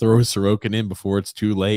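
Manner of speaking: plain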